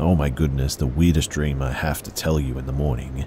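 ordinary delivery

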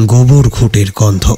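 ordinary delivery

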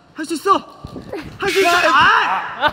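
angry-sounding shouted cheer, high and loud.

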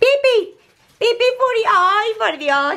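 excited, eager voice.

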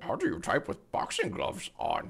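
terrible put-on voice in a breathy whisper. Commenting on a costume, the speaker tries a bad Strong Bad impression. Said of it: "that was the worst strong bad impression".

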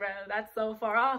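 ordinary talk, nothing marked

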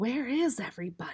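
hushed, soft voice. Narrating a character who asks a question in an empty library: hushed voice. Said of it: "Jobeth asked in a hushed voice".

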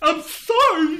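very loud, high, flustered spluttering. Narrator voicing the dragon's reply in a story: sputtering. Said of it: "he sputtered".

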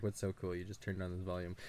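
usual speaking voice

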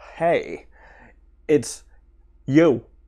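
intentionally bad acting voice. Having admitted you are bad at impressions, make your best attempt, a bad Christopher Walken impression. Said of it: "I'm going to do my best Christopher Walken".

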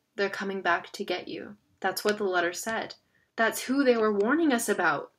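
plain reading voice

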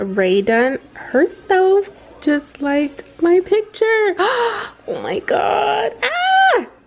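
very high, shrill, very loud, swooping overexcitement. Reacting live after someone liked her picture, freaking out with excitement. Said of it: "I'm literally freaking out".

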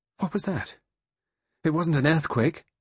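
abrupt, high, exclaiming outburst. Narrator reading a novel, a woman suddenly exclaiming. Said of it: "She exclaimed".

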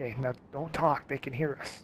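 hushed whisper. Telling the group to be quiet, the speaker is whispering. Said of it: "Why are we whispering?".

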